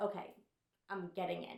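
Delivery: plain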